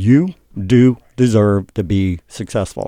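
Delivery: slow, dramatic pause after every single word. Speaker delivering a line as a dramatic thing: pause after each word. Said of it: "I always like to pause by each one of those words. It's like this dramatic thing".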